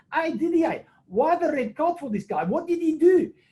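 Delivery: very high-pitched put-on South African twang. Retelling what a south african touch judge asked at half time: imitating a south african accent. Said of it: "and excuse my accent".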